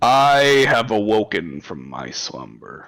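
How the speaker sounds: ancient dragon voice, grand and proclaiming. Narrating a dragon that sits up in a cavern and speaks, in a booming dragon voice. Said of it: "its booming draconic voice".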